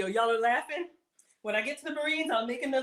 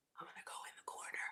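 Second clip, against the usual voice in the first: very quiet, hushed, secretive whisper. Sneaking off to the corner to take a bit of food, whispering. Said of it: "Why am I whispering?".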